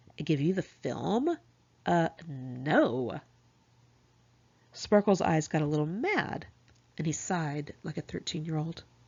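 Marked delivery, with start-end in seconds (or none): 0.2-3.2 very slow, drawn-out, play-acted bitchiest tone. Speaker retells Birdie's answer when asked for the roll of film, imitating Birdie's bitchiest tone. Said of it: "in her bitchiest of tones".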